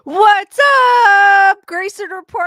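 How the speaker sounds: very loud, cracking voice. Host greeting viewers of the show: voice cracking. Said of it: "I don't know why my voice is cracking".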